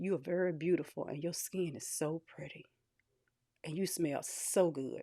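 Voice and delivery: hushed half-whisper, very close to the ear. Retelling what a stranger at Wawa said leaning close, retelling a man's half-whisper. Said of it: "This man actually whispered".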